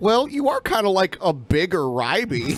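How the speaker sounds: normal talking voice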